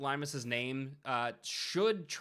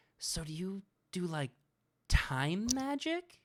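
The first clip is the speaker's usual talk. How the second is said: put-on whisper, higher pitch; 4 semitones higher than usual. Voicing Limus leaning in to ask the player a question, whispering. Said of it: "leans in and whispers".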